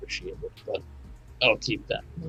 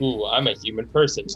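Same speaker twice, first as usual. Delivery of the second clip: ordinary talk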